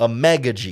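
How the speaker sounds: Amegaji with heavy stress on the meh syllable. Announcing a draft pick's name: stress on meh in amegaji. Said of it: "Emphasis on the meh".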